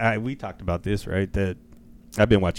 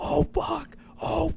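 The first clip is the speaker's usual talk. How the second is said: very high-pitched, excited yelling. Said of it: "I just kept yelling".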